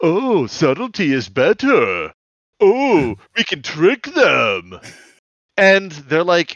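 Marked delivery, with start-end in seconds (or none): 0.0-4.8 loud drawl, high and swooping. Recapping a scene where Block mocks a bickering Lamprey, doing a bad Lamprey impression. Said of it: "Block is doing like a bad Lamprey impression".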